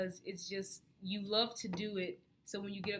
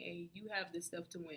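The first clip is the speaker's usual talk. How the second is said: ordinary talk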